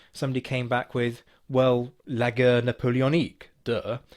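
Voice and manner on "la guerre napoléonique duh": clumsy put-on French accent. Quoting a reply from Twitter, the speaker reads it in an attempted French accent. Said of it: "That was meant to be a French accent".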